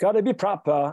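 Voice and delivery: put-on British accent. Explaining a take on a proper style, in a fake British accent. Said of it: "I even have a British accent".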